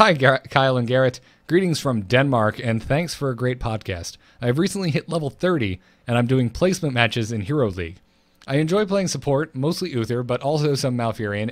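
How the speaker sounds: usual speaking voice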